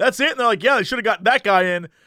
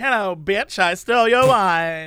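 slow, sassy, cheeky put-on alligator voice; 2 semitones lower than usual. Imagining an alligator that stole the wine: sassy alligator voice. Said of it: "Alligators are the sassy ones".

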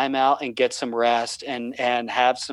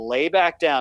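acted-out firm, stern, no-nonsense tone; 3 semitones higher than usual. Retelling telling a daughter to lie back down: retelling a stern order. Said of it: "and I got very stern".

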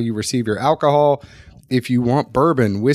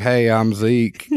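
put-on, fake Southern accent; 3 semitones lower than usual. Speaker demonstrating recording a voice introduction, fake Southern accent. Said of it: "when you fake the Southern accent".

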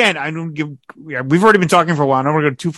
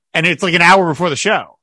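usual speaking voice

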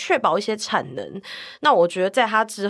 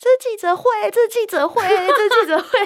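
put-on, very high shouting repeated over and over; 13 semitones higher, 4 dB louder than usual. Retelling what a man shouted when reporters crowded him for selfies, retelling a shout. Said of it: "他还大喊".

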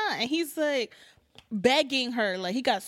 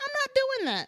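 high-pitched, laughing, mock voice. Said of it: "He's like".

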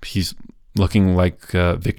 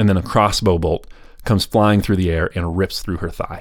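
ordinary talk, nothing marked

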